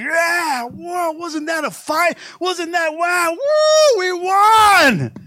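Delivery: loud, high, whooping triumphant victory shouting. Acting out a winning team celebrating: imitating a victory shout. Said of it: "you're shouting".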